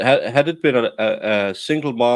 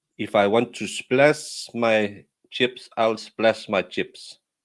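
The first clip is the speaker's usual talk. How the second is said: put-on, fake Eastern European accent; 3 dB quieter than usual. A Danish speaker shows how Eastern Europeans talk, put-on Eastern European accent. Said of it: "I thought they talk more like this".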